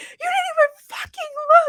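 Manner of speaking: mock enraged, all-out scream, high-pitched. Retelling what Erin screamed at a driver who cut everyone off: retelling Erin's scream. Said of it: "She's screaming".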